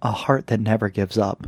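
mock wistful tone. Retelling how a character answered, imitating someone saying it sadly. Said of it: "just very sadly goes".

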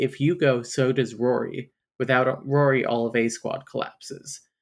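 ordinary talk

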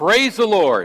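mock high-pitched, called-out cry. Telling a joke about a praying lady: imitating a shout. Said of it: "she'd pray and she'd shout".

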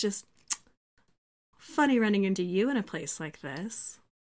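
very sultry, smouldering, seductive delivery. Leaning on a bar and tapping someone's shoulder, in a very sultry voice. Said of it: "very sultry voice".

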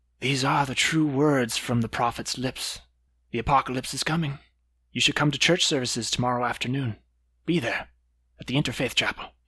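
hushed, close whisper. The game master voices a man pulling a player into an embrace, whispering in your ear. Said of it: "he whispers in your ear".

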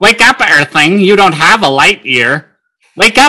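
high-pitched cartoon alien voice. Recalling a childhood alarm clock, the speaker imitates its Marvin the Martian voice. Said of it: "his Marvin would ... he'd go".

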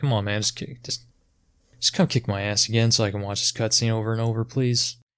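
normal talking voice

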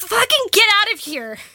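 high-pitched, shrill, all-out yell. A bear lands right on top of them during the game; yelling. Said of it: "The get the fuck out of here was me yelling at Benny".

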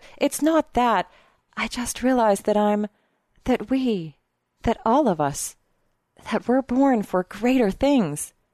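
ordinary delivery

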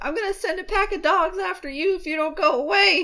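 acted furious, heated, very high-pitched angry voice. Retelling a story scene, acting out a character's mad threat. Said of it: "makes him real mad".

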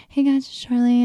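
put-on whispery voice. Imitating how Charli D'Amelio talks in her videos: whispering Charli D'Amelio impression. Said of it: "She whispers".

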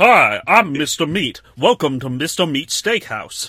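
booming, boisterous, high-pitched and belted out loud. Imitating a game character who greets visitors to his steakhouse: Mister Meat impression. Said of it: "It's a pretty good Mister Meat impression".

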